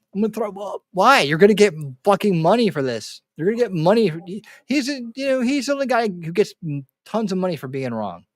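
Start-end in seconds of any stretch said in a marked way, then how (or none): 0.2-0.9 mock sobbed, tearful crying delivery. Imitating Alex Jones crying: imitating Alex Jones crying. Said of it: "Alex Jones crying".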